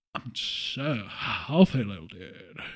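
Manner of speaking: very low, deep cartoon slacker voice. Speaker joking about being scarily healthy, doing Snake voice from The Simpsons. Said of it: "snake voice from The Simpsons".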